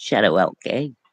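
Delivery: put-on light English accent. Repeating a listener's words, imitating Kerry's English accent. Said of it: "that little English accent".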